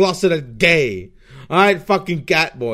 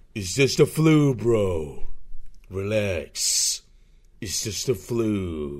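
very low, very slow drawl, "flu" stretched out; 9 semitones lower, 6 dB quieter than usual. Joking to stream viewers, doing a Duke Nukem voice. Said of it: "not a bad Duke Nukem impression".

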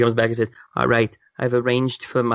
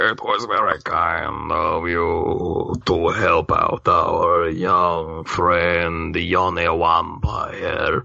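put-on dignified, stately elderly gentleman, low voice; 5 semitones lower than usual. Game master voicing a character who comes out to the players, as a stately dignified old man. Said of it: "a very stately, dignified old man".

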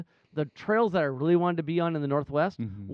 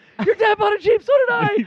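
mock shrill, very loud, high excited burst; 11 dB louder than usual. Acting out your past self running out to tell her, mock-excited announcement. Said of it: "I'm excitedly".

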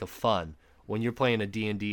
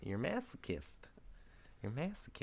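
whispered, breathy, soft, barely voiced put-on voice; 3 semitones higher, 14 dB quieter than usual. Teasing the other speaker after a joke, in a Mike Tyson voice. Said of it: "why'd you say that as Mike Tyson?".

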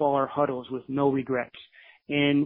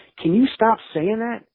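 put-on, very angry, high-pitched voice; 8 semitones higher than usual. Retelling what a resident assistant said when he got mad: imitating someone angry. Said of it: "got really mad at me".

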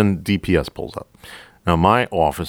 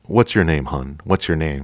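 put-on voice used for a small child. Retelling a trooper kneeling to question a woman: imitating talking to a little kid. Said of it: "like he's talking to a little kid".

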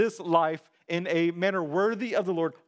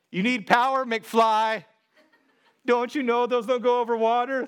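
high, mock villain's jeering, mocking yell; 5 semitones higher, 4 dB louder than usual. Speaker quotes the bad guys' line he and his brother used to yell: imitating a mocking yell. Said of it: "That's the mocking voice that he yells at him".

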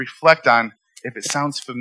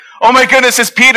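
acted-out thrilled squeal, very high and loud; 11 semitones higher, 10 dB louder than usual. Retelling a story, acting out the servant girl at the door: imitating excited Rhoda. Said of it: "she's so excited she forgets to let him in".

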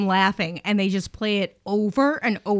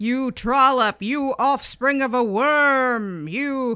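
mock loud, booming voice; 4 semitones higher than usual. Retelling a man insulting people over their deposit, imitating a booming voice. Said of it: "His voice is booming".

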